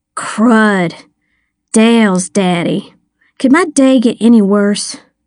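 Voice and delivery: ordinary delivery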